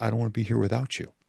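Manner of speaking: gentle quiet voice. Retelling what she would always say to him, in a soft voice. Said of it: "she would always say the same thing in a soft voice".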